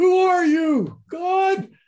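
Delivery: high, loud, startled shout.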